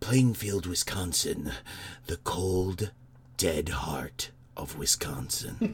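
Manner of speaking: very slow, theatrical, dramatic delivery. Reading out a place description in a dramatic voice. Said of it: "I can only read it in a dramatic voice".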